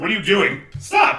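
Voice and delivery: high, indignant, objecting outcry. Voicing a woman protesting at the party: protesting woman. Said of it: "the woman does, in fact, protest".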